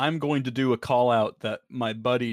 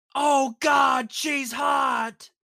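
very high, blurted, drawn-out yell. Retelling what a friend yelled in the theater: imitating DJ Driggs yelling. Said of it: "our buddy DJ Driggs at this moment in the theater yelled".

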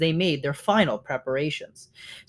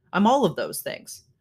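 ordinary delivery, nothing marked

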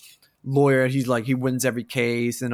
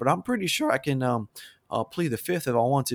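put-on thick Southern accent with drawl. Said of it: "with the biggest Southern accent".

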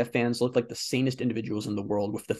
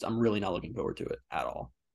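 normal talking voice

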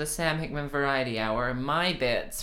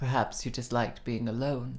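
put-on grave, deadly earnest, very serious, dramatic tone. Recapping an episode, acting out Seven's line to him, mock-serious Seven impression. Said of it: "she says it very seriously".

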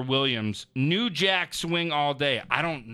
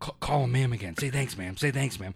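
fast, hushed, rushed stage half-whisper; 3 semitones lower than usual. Retelling what the man beside them half-whispered at the window, retelling a half-whisper. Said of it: "he's whispering".

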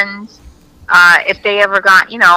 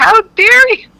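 mock very high, full-on screaming shriek; 13 semitones higher than usual. Retelling chasing a girl down the street, acting out screaming at her. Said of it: "like totally screaming at her".

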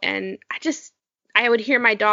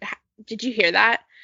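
put-on abrupt, sudden, startled and alarmed voice. Retelling how waking up suddenly sounds: imitating waking up suddenly. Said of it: "I wake up a lot really suddenly".

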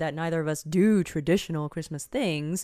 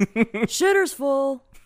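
loud, high-pitched, belted-out character voice; 9 semitones higher, 5 dB louder than usual. Quoting a movie line, asking if the delivery was right: Randy Quaid impression. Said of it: "as close to being Randy Quaid".

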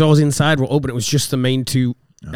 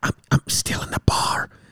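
mock whispered call, quieter. Speaker retells a 3 a.m. call from someone locked in a bar, retelling a whisper. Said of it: "Why are you whispering?".

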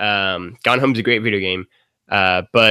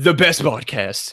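mock impression, boastful bragging tone, higher pitch. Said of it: "tweet at Real Donald Trump".

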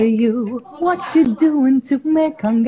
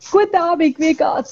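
strong, full-on Swiss accent, pitched up; 5 semitones higher than usual. Answering a request to give a full swiss accent: full swiss accent. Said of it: "Could you give us a full Swiss accent?".

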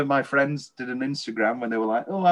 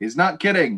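put-on awkward delivery, slower. Retelling a film screening, the speaker quotes Fincher: imitating Fincher, awkward. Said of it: "Fincher awkwardly goes".

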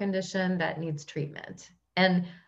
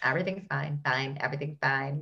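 low, mechanical cartoon robot voice; 4 semitones lower, 4 dB quieter than usual. Quoting a cartoon meme about everything burning: robot voice. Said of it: "That's the robot voice in my head".

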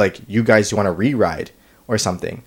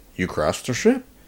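thick, heavily sarcastic, mocking tone; 5 dB quieter than usual. Speaker retelling a woman's reply about the broken ride, imitating her sarcastic tone. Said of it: "so sarcastic".

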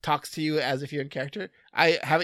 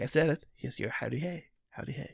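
soft, quiet, soothing, calming host voice; 3 dB quieter than usual. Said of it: "He's just a very quiet, very s-, calming voice".

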